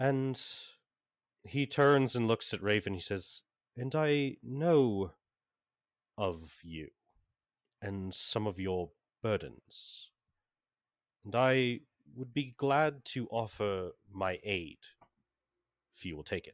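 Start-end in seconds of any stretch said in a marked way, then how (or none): 3.8-16.5 very delicate, gentle voice. Voicing a character who has calmed down and apologizes: very delicate tone. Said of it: "he speaks with a very delicate tone".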